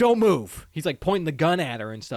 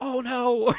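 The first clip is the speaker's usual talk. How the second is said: sudden, high, alarmed scream of dismay; 8 semitones higher than usual. Retelling a movie scene where a character runs in: imitating a scream.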